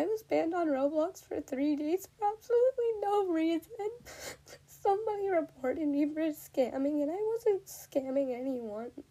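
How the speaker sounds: crying while speaking. Podcast host makes an announcement to listeners, crying while speaking. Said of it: "I am crying because this actually means a lot to me".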